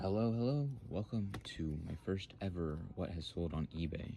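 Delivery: very soft, quiet, hushed, low-key delivery. Imitating the greeting from a first video: imitating own past super quiet talking. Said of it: "I'm just talking super quiet".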